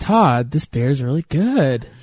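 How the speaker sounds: statement with upspeak, pitch rising on good. Showing how a plain statement sounds: rising inflection at the end. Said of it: "everything ends in a rising inflection".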